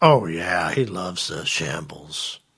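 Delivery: heavy sarcasm, very slow and drawn out. Answering whether he loves the restaurant: sarcastic tone. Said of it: "when you say things in that tone of voice".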